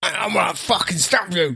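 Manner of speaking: high, aggressive, acidic voice. Speaker imagines how wasps would talk compared with bees: aggressive, acidic wasp voice. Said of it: "They'd be like aggressive and acidic".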